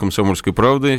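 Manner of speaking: ordinary talk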